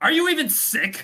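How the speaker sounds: flustered angry grunt, very high and very loud. Speaking in character, red-faced from bed, to Naomi: embarrassed, angry grunt. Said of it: "just grunt at you".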